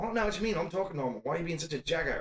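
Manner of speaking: made-up, put-on Australian accent. Retelling talking to a coworker at work in a put-on character voice: put-on Australian-sounding accent. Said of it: "they were fully convinced I was Australian".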